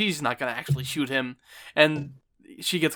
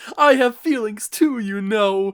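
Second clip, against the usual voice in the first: put-on tearful crying voice, higher and louder; 5 semitones higher, 5 dB louder than usual. Retelling a scene where a character breaks down in tears: imitating someone crying. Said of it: "he starts breaking down in tears".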